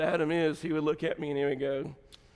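plain

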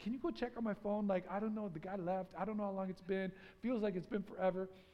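plain

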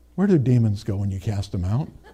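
soft, hushed half-whisper. Retelling his wife's question in bed, imitating his wife half-whispering. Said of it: "And she whispers".

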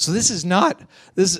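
voice cracking and breaking. Telling the story of Paul coming upon an altar in Athens, voice cracking. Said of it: "I don't know why my voice is cracking".

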